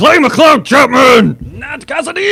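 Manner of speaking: wrestling announcer shout. Telling him his name is great to shout, then shouted like a wrestling announcer. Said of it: "great to shout, like it's a wrestling match".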